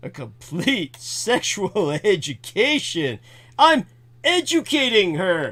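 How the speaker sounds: dry, mocking, sarcastic aside. Commenting on a passage just read aloud: sarcastic. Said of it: "I've really gotta stop being so sarcastic".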